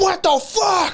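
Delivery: put-on pissed-off grandma voice, pitched way up. Retelling how grandma reacted on seeing the hurt grandson: imitating an angry grandma. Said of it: "My grandma was all pissed".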